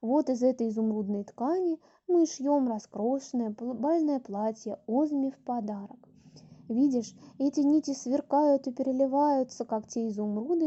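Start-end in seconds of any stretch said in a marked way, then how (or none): none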